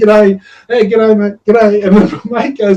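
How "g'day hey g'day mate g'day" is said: mock country bumpkin voice, higher pitch. Retelling greeting everybody walking down the mall: retelling country bumpkin greetings. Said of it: "the, uh, country bumpkin of me".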